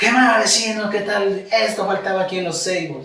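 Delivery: strong, carrying, loud voice pitched very high. Retelling a new customer's first greeting: imitating a man talking loudly. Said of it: "llegó con una voz así, que sabe hablar fuerte".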